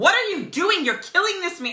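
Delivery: play-acted fierce, very loud, high-pitched aggressive yell. Imagining confronting police at a violent arrest: acting out aggressive anger. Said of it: "I would have been aggressive".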